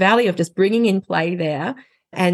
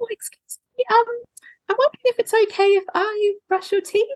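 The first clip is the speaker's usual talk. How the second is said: very high-pitched, tiny toy-donkey character voice. Retelling talking to a child through a toy donkey: little donkey voice. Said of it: "in the little donkey's voice".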